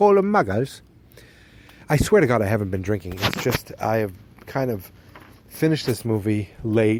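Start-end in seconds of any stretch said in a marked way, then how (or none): 0.0-0.8 hammed-up put-on British accent, very high and loud. Imitating someone in the UK naming non-magical people, in a British accent. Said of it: "That's my United uh, Kingdom British accent".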